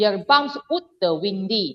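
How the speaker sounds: put-on Malaysian Chinese accented speech. Retelling trying a phrase in an accent, the speaker uses a Malaysian Chinese accent. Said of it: "I tried to say it in Malaysian Chinese accent".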